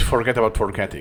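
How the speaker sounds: usual speaking voice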